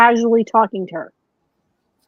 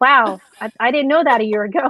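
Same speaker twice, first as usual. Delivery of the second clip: usual speaking voice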